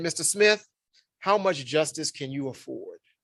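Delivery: mock bone-dry deadpan delivery, no joking tone. Retelling what a torts professor said in law school: imitating a deadpan delivery. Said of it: "deadpanned me".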